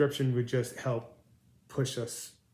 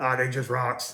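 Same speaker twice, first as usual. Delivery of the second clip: put-on gruff voice; 6 dB louder than usual. Describing a diorama video maker, the speaker is imitating his gruff voice. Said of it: "he's got this gruff voice".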